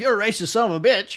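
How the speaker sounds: put-on loud, horrible British accent. Retelling Nick's interview, play the interviewer in a horrible British accent as Piers Morgan. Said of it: "That was a horrible British accent".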